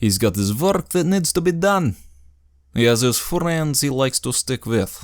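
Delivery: put-on Slavic accent. Voicing a monster hunter character in a generic Slavic accent. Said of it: "the most generic Slavic accent I can manage ... He's got kind of a lighter tone to him. ... who was a monster hunter".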